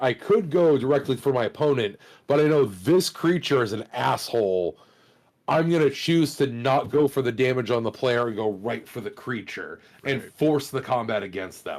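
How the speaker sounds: ordinary delivery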